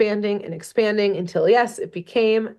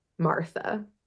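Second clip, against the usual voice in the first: imitated quiet voice, quieter; 2 semitones lower, 8 dB quieter than usual. Retelling a story where a quiet character speaks up: imitating a very soft voice. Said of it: "We hear very softly".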